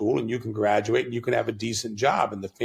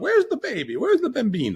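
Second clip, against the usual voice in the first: put-on very high, swooping, sing-song old Italian grandmother voice; 14 semitones higher than usual. Imagining a future self walking around, in an old Italian grandmother voice. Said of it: "become the old Italian grandmother walking around going".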